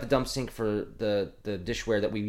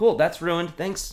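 dry, mock-grateful sarcasm, pitched up; 6 semitones higher, 4 dB louder than usual. Recounting someone dropping a polishing towel in the speaker's area, retelling a sarcastic remark. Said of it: "I'm like".

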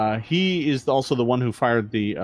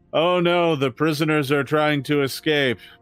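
low-energy, half-hearted, flat, lackluster call; 3 semitones higher than usual. Voicing a guard who doesn't scream but speaks with lackluster energy. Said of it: "He says it with lackluster energy".

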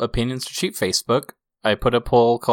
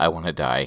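bone-dry, very low, deadpan delivery; 8 semitones lower, 4 dB quieter than usual. Retelling a reply to a coworker's warning: very dry voice. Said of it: "with just the driest voice".

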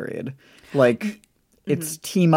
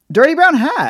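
all-out shrill screech, very high pitch; 14 semitones higher, 7 dB louder than usual. Answering what the character said first, frustrated by her description: screaming. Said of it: "You just screamed at me".

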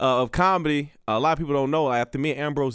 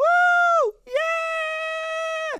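mock very high squealing cheer, drawn-out yeah. Imitating the crowd at a show: imitating women screaming.

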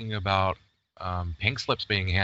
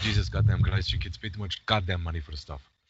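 put-on Hungarian accent, older-man voice; 3 semitones lower than usual. Showing they can mimic the Hungarian accent, in a mimicked Hungarian accent. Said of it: "I can mimic the Hungarian accent".

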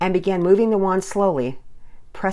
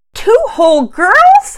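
very high, very loud squeaky voice; 13 dB louder than usual. A narrator reads a child's question to a woman, in a squeaky voice. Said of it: "asked in a squeaky voice".

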